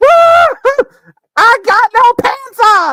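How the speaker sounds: put-on shrill, very loud, drawn-out toddler holler. Describing a mom struggling with a pantsless toddler: imitating an obnoxious toddler. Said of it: "this obnoxious toddler that's, like, running around sans pants".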